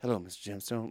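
tiny little voice, very quiet and hushed. Describing a show character's way of talking: imitating Keith's very quiet voice. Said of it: "the way he talks and everything is like".

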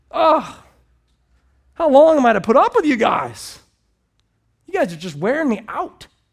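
very loud, high, fed-up, exasperated outburst. Acting out what Jesus said to the guys, in an exasperated Jesus voice. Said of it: "You can feel the exasperation in his voice".

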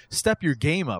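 ordinary talk

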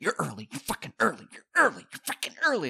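grumbled muttering under the breath, repeated. Retelling how a man ran up when the speaker came in early, muttering under breath. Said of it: "was just like under his breath".

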